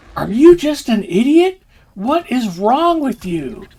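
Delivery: mock furious shout, very high and swooping. Retelling how a wife kept yelling at her husband: imitating a wife yelling angrily. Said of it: "while she's yelling at him".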